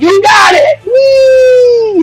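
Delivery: put-on gleeful shout. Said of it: "And he's like".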